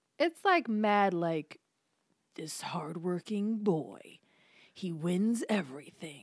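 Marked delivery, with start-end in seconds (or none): 2.4-6.2 sensational tabloid documentary narrator voice. Imitating a documentary about a sports star: mock tabloid documentary narration. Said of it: "Is that the voice?".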